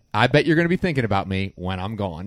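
normal talking voice

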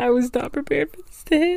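tearful, high-pitched voice, weeping through the words. A speaker thanking someone for inspiring them breaks down, crying. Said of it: "I'm literally crying".

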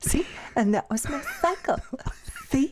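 soft condescending light voice. Mimicking how the other person talked to them, little light voice. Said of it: "talk with your little light voice? Like".

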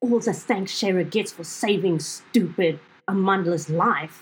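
huffed-out, angry, huffing tone. In a role-play, one character answers another, huffing angrily. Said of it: "I'm going to huff angrily and say".

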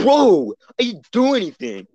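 mock very high, loud, drawn-out angry voice. Retelling a classmate's reaction, imitating Brody angrily. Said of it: "Brody gets so pissed about it".

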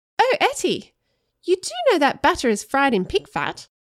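sudden, high, lilting, swooping exclaim. After Etta scrapes her bowl clean, Erica tells her: exclaiming. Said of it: "then exclaimed".

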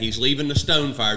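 usual speaking voice

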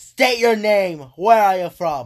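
loud shout. Voicing a character questioning a messenger: yelling. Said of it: "He yelled".

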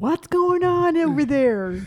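loud, deliberate, drawn-out scolding call. Imitating Robert as a fussy old person: imitating Robert. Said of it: "he'll be like".

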